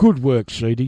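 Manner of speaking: put-on sarcastic tone. Reading out a winning competition answer aloud: put-on sarcasm. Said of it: "this is to be said with sarcasm".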